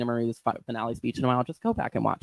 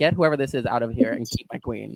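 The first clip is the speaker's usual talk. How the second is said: ordinary talk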